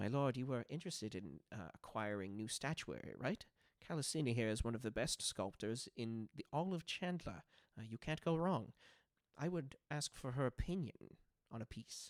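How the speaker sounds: hushed, confidential stage whisper. Voicing a character who speaks to his lord: half-whispering. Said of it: "whispers and says".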